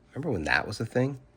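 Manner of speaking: plain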